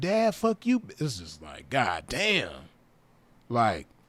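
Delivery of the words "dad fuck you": put-on little child voice, much higher pitch. Retelling a voicemail, the speaker imitates the little child talking. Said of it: "the little baby is like".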